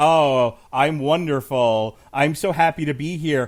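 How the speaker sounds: loud, drawn-out, smug, obnoxious fake-gracious voice. Predicting how a wrestler will act on Friday: imitating an obnoxious heel. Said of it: "in that shitty heel way".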